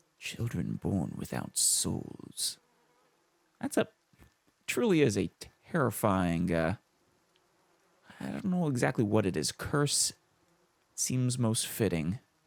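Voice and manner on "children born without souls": voice sunk to whisper. Character speaking to foreigners, lowering his voice to a whisper. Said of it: "He lowers his voice to a whisper".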